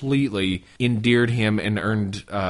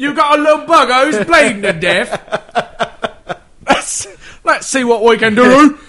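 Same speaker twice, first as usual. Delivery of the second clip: put-on loud, belted-out, high-pitched Cockney accent; 11 dB louder than usual. Retelling Rasputin walking into the palace, Rasputin in a Cockney accent. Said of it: "He changed, to Cockney".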